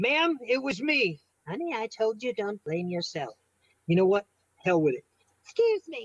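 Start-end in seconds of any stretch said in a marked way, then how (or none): 1.5-3.3 imitated little old lady voice, quieter. Retelling a story, the speaker voices what a little old lady said: imitating a little old lady. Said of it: "this little old lady's face".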